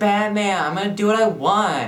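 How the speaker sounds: high, loud, whiny bratty sidekick voice.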